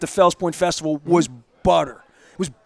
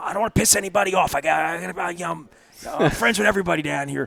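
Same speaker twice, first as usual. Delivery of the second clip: put-on raspy man's voice; 5 dB quieter than usual. Telling a host what Mike would always say to him: imitating Mike's raspy voice. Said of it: "a raspy voice".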